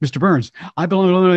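put-on rapid-fire talk, a mile a minute. Retelling a man who catches a guest speaker outside the men's room, rapid-fire talk. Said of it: "He's talking a mile a minute".

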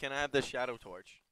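loud shouting.

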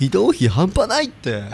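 high, slow voice with wide-swinging pitch.

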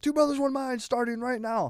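very high, shrill, loud carnival-barker yell. Retelling how a companion drew a crowd: imitating a yelling carnival barker. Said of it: "the carnival barker".

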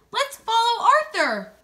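very high, urgent shout. Narrating a story, voicing Alice as she spots Arthur fluttering overhead: shouting. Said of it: "she shouted".

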